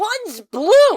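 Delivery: loud, shrill, offended, snapped out high. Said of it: "With just the most offended look on his face".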